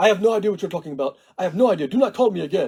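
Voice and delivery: imitated Arabic accent, male. Retelling a phone call with a man: imitating an arabic accent. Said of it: "he's all of a sudden Arabic".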